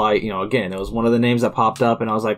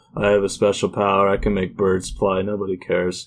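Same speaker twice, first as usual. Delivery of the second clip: put-on bone-dry, flat monotone deadpan delivery; 2 semitones lower than usual. Retelling how a man delivered every single line, imitating a dry monotone. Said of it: "He's very dry and monotone".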